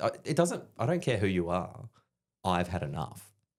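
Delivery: mock words broken up by laughing. Retelling a soldier's reply to a sergeant: imitating someone laughing while talking. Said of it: "he just starts laughing".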